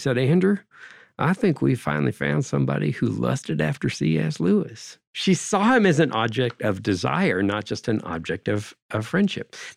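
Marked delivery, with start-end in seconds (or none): 0.2-5.0 warm-toned, lovely, unhurried Southern US drawl. Retelling what Don King said over Skype: imitating Don King's Southern drawl. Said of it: "in his lovely, uh, Southern drawl".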